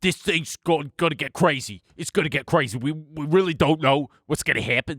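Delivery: put-on very East Coast man's voice. Imitate a guy on TikTok talking about the market, in a super East Coast guy voice. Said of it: "who's like this super East Coast guy".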